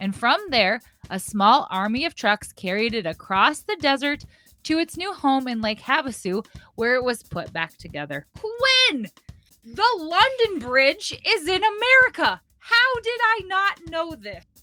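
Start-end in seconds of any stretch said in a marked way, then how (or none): 8.3-14.4 very high, drawn-out excited yelling. Reacting to a trivia fact while writing questions, yelling excitedly. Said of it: "Sorry, I'm yelling".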